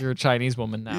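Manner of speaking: ordinary talk, nothing marked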